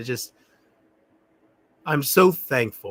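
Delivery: holding back tears, fighting off crying.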